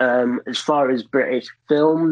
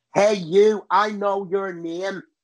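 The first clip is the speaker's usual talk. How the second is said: put-on harsh Northern Irish accent, pitched higher; 4 semitones higher than usual. Explaining Irish accents, the speaker demonstrates a harsh Northern Irish accent. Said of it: "the Northern Irish accent is very like kind of harsh".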